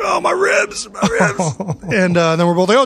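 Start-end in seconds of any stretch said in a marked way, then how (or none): 0.0-1.8 anguished, very high, drawn-out scream of pain. Speaker recalls falling on his dad during a fight, imitating dad screaming in pain. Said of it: "him screaming, like".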